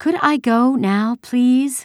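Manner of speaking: very high, drawn-out, exasperated and impatient tone. Anne-Marie speaks to a soldier holding her basket, impatiently. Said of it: "she asked impatiently".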